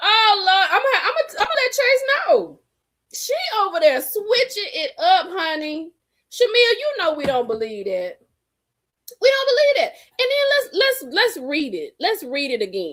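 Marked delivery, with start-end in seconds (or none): 0.0-2.6 put-on grand rich lady voice, pitched up, airy. Picturing a life of wearing caftans at home: acting as a rich woman. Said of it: "I am a rich woman".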